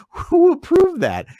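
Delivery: very high, loud, slow, incredulous, outraged voice.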